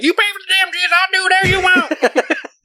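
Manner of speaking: put-on wild, crazy, squeaky, very high Southern accent. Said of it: "really crazy, like, Southern accent".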